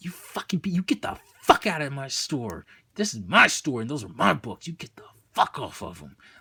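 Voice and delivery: mock-angry freaking-out outburst. Retelling freaking out when the store opened early: retelling an angry outburst. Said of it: "like that was my attitude".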